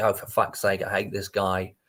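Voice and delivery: ordinary delivery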